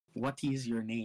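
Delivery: put-on accented, dumbed-down English. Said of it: "I'll just say it stupid".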